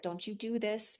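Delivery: soft, hushed half-whisper, under the breath. Retelling what one half-whispers to a three and a half year old: imitating own half-whisper. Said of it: "whispering to her".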